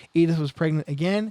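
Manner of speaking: ordinary delivery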